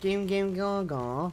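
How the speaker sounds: put-on London accent. Speaker from Manchester showing how they say it, in a London accent. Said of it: "We say it in a London accent".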